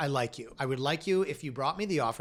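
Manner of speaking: ordinary talk, nothing marked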